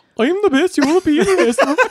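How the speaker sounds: put-on Swedish accent. Asked by another speaker to do the line like Swedish, put-on Swedish accent. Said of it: "Can you do like Swedish?".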